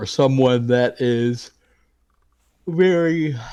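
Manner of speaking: very loud, slow talk broken by a yawn. Speaker explaining something to a listener, talking through a yawn. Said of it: "I keep yawning on you".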